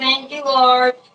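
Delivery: mock screaming. Retelling jumping up off the couch after today's proceedings: imitating own scream. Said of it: "I was screaming".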